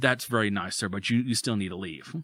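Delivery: calm, polite, unraised voice. Retelling facing a threatening man, the speaker quotes his own calm, polite reply. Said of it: "I have not raised my voice".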